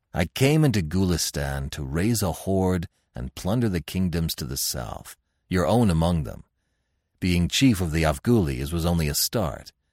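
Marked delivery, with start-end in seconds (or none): none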